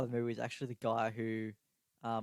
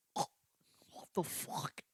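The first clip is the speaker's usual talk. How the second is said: put-on monster voice, quieter. Imitating Venom shouting in surprise: imitating Venom. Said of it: "Is that you trying to imitate Venom?".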